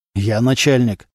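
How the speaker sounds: ordinary delivery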